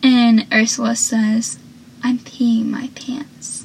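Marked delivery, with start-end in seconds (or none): 2.0-3.7 put-on deadpan delivery, quieter. Recapping a scene, speaker acts out Ursula answering Pacey: deadpan Ursula impression. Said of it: "Like a deadpan voice".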